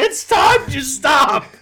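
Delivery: put-on yelling. Repeating a joke line along with the others: put-on yelling. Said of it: "Why are we yelling?".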